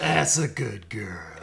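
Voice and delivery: put-on cowboy drawl. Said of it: "I love Arthur Morgan's voice".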